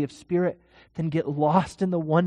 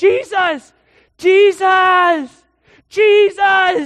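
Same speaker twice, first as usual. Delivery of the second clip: high, very loud yelling; 13 semitones higher, 10 dB louder than usual. Telling of a blind beggar who hears Jesus is coming, acting out a blind man yelling. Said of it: "So he just starts yelling".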